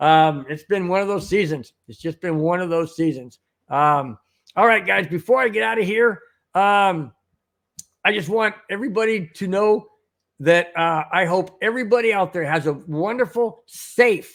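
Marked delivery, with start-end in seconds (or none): 13.7-14.3 heavy stress on the word safe. Wishing everybody out there a wonderful New Year's Eve: stress on SAFE. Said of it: "emphasize on the word safe".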